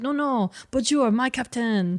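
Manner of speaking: put-on French accent. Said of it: "he speaks in a French accent".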